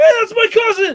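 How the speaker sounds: very high, loud, excited yell. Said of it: "I yelled out loud".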